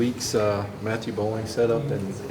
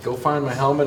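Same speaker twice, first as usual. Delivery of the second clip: normal talking voice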